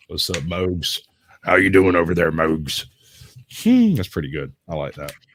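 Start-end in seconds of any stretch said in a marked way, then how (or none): 0.1-2.8 put-on hillbilly twang, slower. Trying out a viewer's suggested way to say Mogs, in a hillbilly twang. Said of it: "Mogs with a hillbilly twang".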